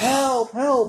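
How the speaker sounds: high, loud, panicked screaming.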